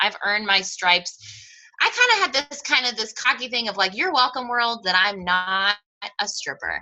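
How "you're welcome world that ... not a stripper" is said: normal talking voice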